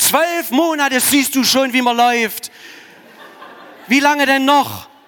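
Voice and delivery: fake scolding bellow, very loud, high and shrill. A father ironically shows how he would yell at his fallen one-year-old, ironic mock yelling at a child. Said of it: "das war Ironie".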